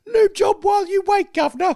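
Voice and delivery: put-on squeaked-out voice in English accent. Retelling a classic Simpsons gag to a co-host, doing Squeaky Voiced Teen's English accent. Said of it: "squeaky voice teen putting on an English accent".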